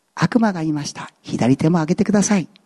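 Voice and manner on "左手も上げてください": feigned kindly, gentle voice, clearly put on. Telling the devil's trick command, in the devil's put-on gentle voice. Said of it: "イエス様と同じに優しく言えばみんな引っかかるはずだと".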